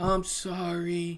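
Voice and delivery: acted, high, sad little kid voice. Retelling the nephew's apology after his mother yelled at him: imitating a sad child. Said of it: "he gets all sad".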